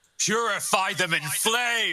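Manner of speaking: very high, shouted battle yell. Aid gets up clutching his broken ribs and calls out: Aid yelling. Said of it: "And he yells out".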